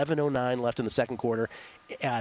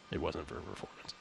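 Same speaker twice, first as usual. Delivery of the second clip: put-on voice, very low, very quiet and hushed; 10 semitones lower, 11 dB quieter than usual. Quoting what Bill Belichick later said about a benching: Bill Belichick voice. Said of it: "In his Belichick voice".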